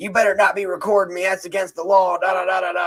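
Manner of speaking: mock very high, shrill, shouted yelling rant. Retelling how a man at the state's attorney's office yelled: imitating Michael May yelling. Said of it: "He started yelling".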